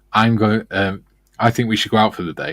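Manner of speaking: ordinary delivery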